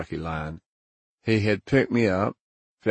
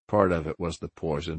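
ordinary delivery

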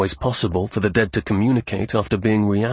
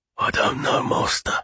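hoarse, rasping, grating voice. Narrating a story, a creature answers its master's question, rasping voice. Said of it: "it replied in a rasping voice".

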